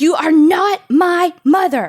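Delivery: very high, shrill, loud scream. Telling a story, speaker acts out a woman at the door: retelling a scream. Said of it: "she screams".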